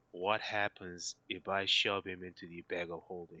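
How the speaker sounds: hushed half-whisper. Half-whispering a question to another character during a game scene: half-whispering in character. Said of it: "I'm gonna whisper to Harry Wrinklebottom".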